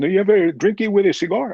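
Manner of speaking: put-on heavy Cuban accent. Quoting what a Cuban friend asked him, in a heavy Cuban accent. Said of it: "you had a heavy Cuban accent".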